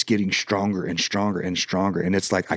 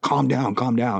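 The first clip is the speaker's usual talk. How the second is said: mild, restrained, held-back yell; 4 semitones higher than usual. Retelling holding a mad man and screaming in his ear: retelling a scream. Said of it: "I'm screaming in his ear".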